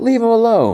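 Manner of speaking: put-on sharp, shrill shout, pitched very high. Narrating what Wim did next in the story, retelling a yell. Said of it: "And then Wim yells".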